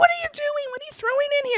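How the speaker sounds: put-on very high, fast, panicked, freaked-out screaming. Retelling being in the shower as he threw things in: retelling a panicked scream. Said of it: "I was freaking out and screaming at him".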